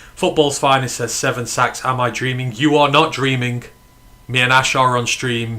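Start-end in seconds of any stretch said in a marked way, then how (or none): none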